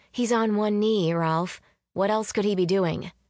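plain reading voice

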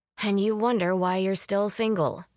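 plain

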